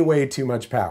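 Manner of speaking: ordinary talk, nothing marked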